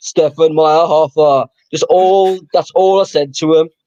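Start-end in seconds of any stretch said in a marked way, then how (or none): 0.0-1.5 put-on Austrian action-movie style accent. Retelling shouting a footballer's name at girls on holiday: Arnold Schwarzenegger accent. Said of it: "In an Arnold Schwarzenegger accent".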